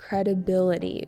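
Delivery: credibility with stress on third syllable "bi". Teaching the word credibility: stress on 'bi' in credibility. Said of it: "with an emphasis on the B, the third syllable".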